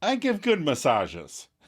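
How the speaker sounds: affronted, defensive, indignant tone. Retelling a sitcom scene, quoting Monica: imitating indignant Monica. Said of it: "Monica gets all indignant".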